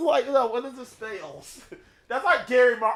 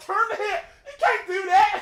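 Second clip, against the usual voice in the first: mock shrill, very high screaming; 11 semitones higher than usual. Retelling the family watching Legend of the Hidden Temple: retelling screaming at the TV. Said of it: "we're all screaming at the T V".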